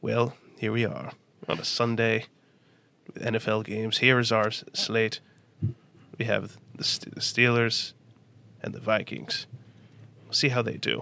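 breathy, hushed, quiet narrator voice. Doing an impression as if narrating NFL Red Zone: Morgan Freeman voice. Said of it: "Morgan Freeman doing N F L Red Zone".

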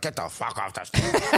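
put-on angry, mad yelling. Retelling a heckler's reaction after the team got on stage: imitating an angry fan. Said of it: "they're so mad".

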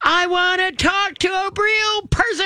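play-acted, shrill, very high, fed-up shriek. Recounting demanding a real person, re-enacting her own screaming at him. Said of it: "And I'm screaming at him".

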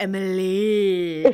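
the name stretched out long. Discussing unusual spellings of names, drawn-out Emily. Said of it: "you even say it like elongated".

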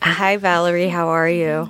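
sultry, sensual, very low voice. A host greets the guest valerie: sensual tone. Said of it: "That was such a sensual tone".

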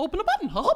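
squeaking, pitched way up high. Mocking how the other speaker just said it, repeat the line in a Mickey Mouse voice. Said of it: "That's exactly how you sounded".

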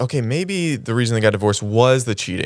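ordinary talk, nothing marked

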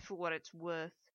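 with a snort. Fitzroy answers Father's promise, snorting. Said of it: "Fitzroy snorted".

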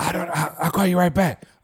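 imitated whispering. A husband acts out his wife answering his call, imitating someone whispering. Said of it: "she would answer the phone and literally be whispering".

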